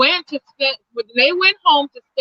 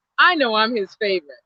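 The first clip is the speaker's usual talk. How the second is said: ordinary delivery, nothing marked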